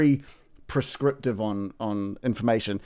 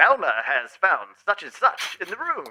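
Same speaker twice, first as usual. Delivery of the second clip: smooth, high, swooping radio announcer voice; 7 semitones higher than usual. Explaining how they ad-lib the narration, demonstrating: radio announcer voice. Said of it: "chuck on the radio announcer voice".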